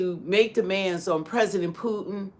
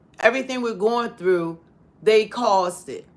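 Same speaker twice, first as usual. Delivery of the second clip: ordinary talk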